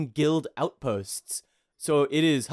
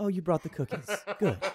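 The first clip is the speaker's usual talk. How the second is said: very quiet, quick, hushed murmur, barely there; 3 semitones higher, 4 dB quieter than usual. Narrating a scene, voicing a woman who greets the three listeners, in a very quiet voice. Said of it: "talks in a very quiet voice".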